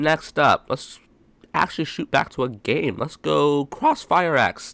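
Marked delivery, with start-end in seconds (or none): 3.0-4.7 slow delivery with voice breaking mid-phrase. Speaker introducing the next game to talk about, with a voice crack. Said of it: "That was a voice crack".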